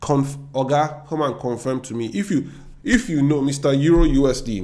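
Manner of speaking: very slow Nigerian-accented speech. Talking to his Forex Mastery students about a currency pair, Nigerian accent. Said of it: "now my Nigerian accent is out".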